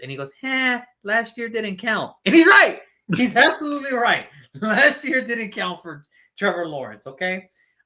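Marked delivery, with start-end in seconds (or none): 0.4-2.1 put-on high, slow baby voice. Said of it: "he still had his baby voice".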